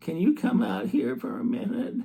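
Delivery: put-on tiny, very high little child's voice. Recalling first approaching mom as a child, imitating own little child voice. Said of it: "I can just imagine what my little voice sounded like".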